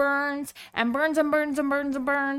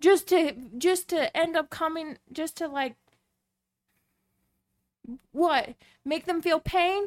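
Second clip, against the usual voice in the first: tearful, close to crying, words repeating. Upset about a couple put through a scam, near tears. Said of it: "sorry guys like i'm i'm ready to cry".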